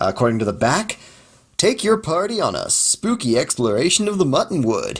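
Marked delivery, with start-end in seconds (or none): 1.6-5.0 put-on, pitched-up announcer voice. Reviewing a one-shot adventure, the speaker reads the blurb on its back: announcer voice. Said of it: "this is not the announcer voice they want reading".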